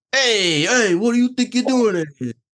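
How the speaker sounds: put-on Jersey wiseguy accent, pitched very high. Voicing the gabagool character questioning an intruder: put-on jersey accent. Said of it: "The Jersey accent must be saved".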